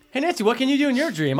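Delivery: mock gushing, too cheerful, bright and quick. Making fun of an actress's line delivery: mock overly happy delivery. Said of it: "she's so happy. Why are you so happy?".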